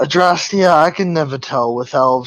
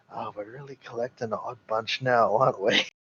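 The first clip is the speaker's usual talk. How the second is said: very quiet, hushed half-whisper; 3 semitones lower, 11 dB quieter than usual. A player's character leans in and half-whispers to Aldrich. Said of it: "whisper to him".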